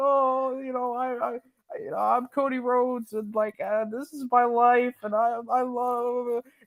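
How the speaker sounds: acted high, slow, weepy, halting teary blubbering. Mocking a wrestler who cries in the ring: mock crying Cody Rhodes impression. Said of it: "he's crying in the ring".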